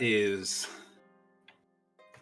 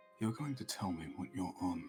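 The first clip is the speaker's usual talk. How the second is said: quiet, much lower and softer; 4 semitones lower, 9 dB quieter than usual. Stepping closer and looking her dead in the eyes, saying it quietly. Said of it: "just say quietly".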